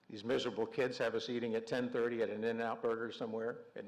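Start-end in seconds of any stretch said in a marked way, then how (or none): none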